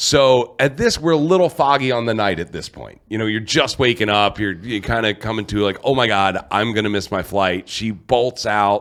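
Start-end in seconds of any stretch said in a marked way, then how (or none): 5.8-7.7 mock panicked voice, lower pitch. Retelling how she woke up late for her flight: imitating someone panicking. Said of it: "she gets up in a panic".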